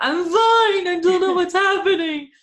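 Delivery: very high, loud speech through tears. Recalling answering worried friends during a meditation: retelling crying speech. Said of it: "I'm like crying, going".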